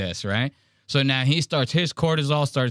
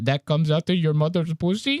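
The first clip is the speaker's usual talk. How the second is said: imitated Indian accent; 3 semitones higher than usual. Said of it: "Indian accent and all".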